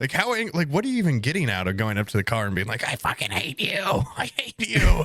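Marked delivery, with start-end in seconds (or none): 2.9-5.1 mock furious yelling, pitched-up and swinging. Describing drivers who get out at a green light, retelling an angry yell. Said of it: "they're yelling at the car".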